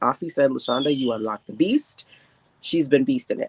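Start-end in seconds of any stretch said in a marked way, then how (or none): none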